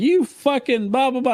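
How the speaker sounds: mock, shrill, pitched-way-up teasing yell. Retelling how Bob started yelling at him while joking around: imitating Bob yelling. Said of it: "he started, like, like, yelling".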